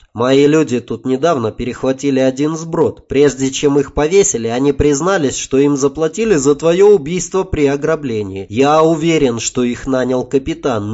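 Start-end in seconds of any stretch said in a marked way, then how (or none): none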